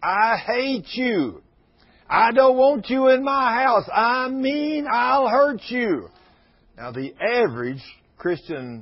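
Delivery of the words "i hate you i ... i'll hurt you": put-on, very slow, drawn-out, high screaming. Retelling what a woman screamed when brought out: imitating someone screaming. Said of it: "she starts screaming".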